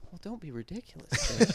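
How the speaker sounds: high, quiet, small, terrifying voice. Acting out Alan refusing to let Jake leave: quiet little terrifying Alan voice. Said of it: "It's this quiet little terrifying voice".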